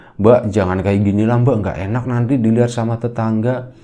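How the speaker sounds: ordinary talk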